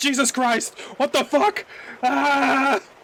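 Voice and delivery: high, panicked screaming with long "ah". Reacting in character as Joe during a roleplay game, screaming his head off. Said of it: "screaming his head off".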